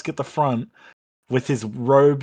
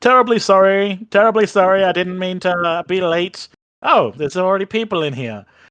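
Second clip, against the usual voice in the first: high, loud skeleton voice; 6 semitones higher, 5 dB louder than usual. Game master voicing a skeleton who arrives as the players find someone asleep: skeleton voice. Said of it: "there is a skeleton standing there wearing a pair of spectacles".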